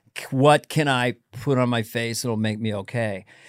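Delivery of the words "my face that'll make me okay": ordinary talk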